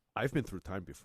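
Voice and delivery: put-on French-accented action-star delivery. Quoting the line that Jean-Claude Van Damme would always say: Jean-Claude Van Damme impression. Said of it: "he would always say that line".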